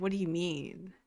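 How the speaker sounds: mock-defensive tone, only slightly. Retelling an exchange, voicing Malka answering back: mock-defensive, a little. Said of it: "Malka gets a little defensive".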